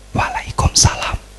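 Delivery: almost silent, barely audible whisper under the breath. Retelling how the companions answered the Prophet's greeting: very soft, almost silent. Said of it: "Sahabat jawabnya kayak gini. ... Pelan-pelan dalam hati".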